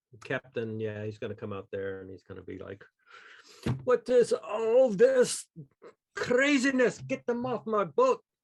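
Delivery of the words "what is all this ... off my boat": fake Scottish accent, very high, shrill, loud, drawn out. Imagining the captain coming out and ordering people off his boat: put-on Scottish accent. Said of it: "Is that Irish?".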